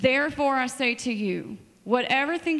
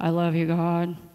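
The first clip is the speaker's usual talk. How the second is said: deep, very low, flat robotic drone monotone; 7 semitones lower than usual. Showing praise said like a robot would, in flat robotic monotone. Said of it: "It'd be monotone. ... Like the red eye guy".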